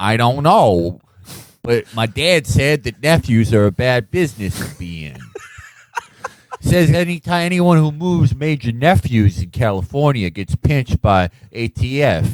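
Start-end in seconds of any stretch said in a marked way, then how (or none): 0.0-5.2 shaky, bad put-on accent slipping into Australian. Acting out a biker character's line: bad accent slipping into Australian. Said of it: "Jax and his, like, shitty accent that always slips back into Australian".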